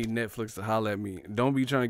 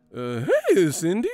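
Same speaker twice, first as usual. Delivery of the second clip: put-on very loud, pitched-up cracking teen voice; 8 semitones higher, 8 dB louder than usual. Mocking someone still going through puberty greeting a girl, imitating a cracking voice. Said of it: "your voice cracking".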